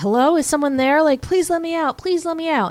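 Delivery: put-on high, distressed, upset ghostly pleading voice. Retelling a ghost locked in a closet asking to get out: imitating an upset ghost. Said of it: "and he's very upset, and he's like".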